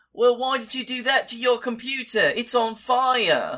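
very high British accent, "fire" drawn out. After the host says the guest turns British when anxious: Moss from The IT Crowd voice. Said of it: "he turns British".

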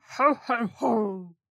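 deep, jolly voice, boomed out. Asked during a Christmas question round to say ho ho ho: Santa voice. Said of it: "Say ho ho ho in your best Santa voice".

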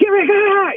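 put-on, very high-pitched, shrill yelling. Retelling a TSA agent in an airport: imitating an agent yelling. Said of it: "he was just yelling".

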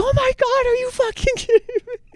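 very high, freaked-out cry. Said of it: "she's freaking out".

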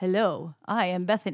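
slow, mechanical robotic speech. Recalling early podcast episodes: imitating own robot voice. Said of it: "I had, like, a robot voice".

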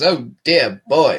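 put-on mid-Atlantic accent. Joking on air about speaking politely, in a put-on mid-atlantic accent. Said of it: "We should be talking with a mid-Atlantic accents".

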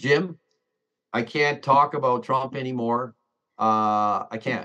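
usual speaking voice

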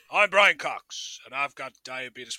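deep, low advert voiceover voice. Joking about putting Brian Cox in a diabetes advert: Morgan Freeman voice. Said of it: "He's got Morgan Freeman on me".

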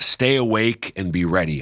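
normal talking voice

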